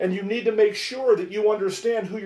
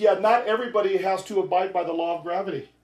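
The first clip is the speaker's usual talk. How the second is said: usual speaking voice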